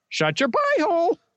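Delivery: very high, squawking parrot voice. Acting out a scene, speaking as the parrot: parrot voice. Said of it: "Very nice parrot voice".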